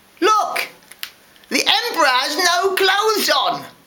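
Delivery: very high, shrill shout mixed with laughter. Narrator voicing a small boy among the crowd: laughing shout. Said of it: "laughed out loud and shouted".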